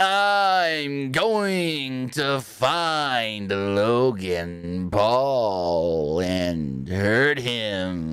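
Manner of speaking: very slow eerie promo drawl, "I'm" stretched. Self-declared fan mocks Seth Rollins's weird cadence: monotone Seth Rollins cadence. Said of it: "the monotone kind of like Joker-ish voice".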